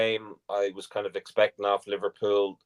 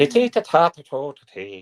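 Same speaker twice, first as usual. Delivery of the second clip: loud, swooping fake Irish accent, unlike real speech; 6 semitones higher, 5 dB louder than usual. Joking about a film where they all have Irish accents: put-on Irish accent. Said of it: "no Irishman ever spoke like that".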